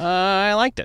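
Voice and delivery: very high pitch, understated, holding back. Retelling a brother's reply after the movie: Mike impression. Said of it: "I do a really good Mike impression".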